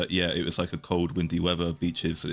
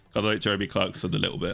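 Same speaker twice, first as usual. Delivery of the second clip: plain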